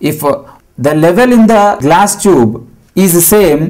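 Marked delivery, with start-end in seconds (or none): none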